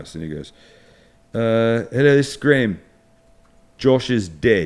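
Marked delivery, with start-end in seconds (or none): 1.9-4.7 put-on loud South African accent. Retelling a voice message left on the house phone, imitating Graham's South African accent. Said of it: "he calls up with his accent".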